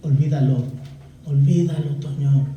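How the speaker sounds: longing, yearning, pleading tone. Voicing the Spirit yearning jealously over a believer: voicing the Holy Spirit pleading. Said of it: "el Espíritu Santo te anhela celosamente y te dice".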